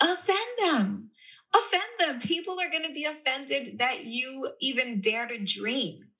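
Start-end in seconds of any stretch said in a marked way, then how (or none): 0.0-2.2 play-acted high, swooping, sing-song shouting. Retelling a reply into the microphone to a woman in the audience: imitating own shout. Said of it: "I shouted back into the microphone".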